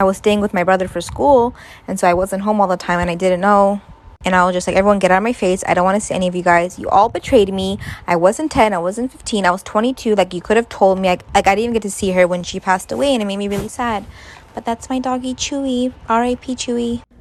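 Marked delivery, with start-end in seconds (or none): none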